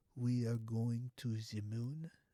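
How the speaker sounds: slow, failed, bad attempt at German accent. Acting out a group of people talking, in a bad German accent. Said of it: "I can't even do a German accent".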